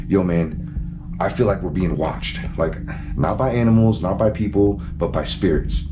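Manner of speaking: plain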